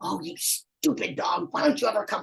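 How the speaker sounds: high, rough, angry scolding tone. Giving dog recall advice, showing what not to say: mock-angry scolding at the dog. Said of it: "you don't want to be mad at the dog".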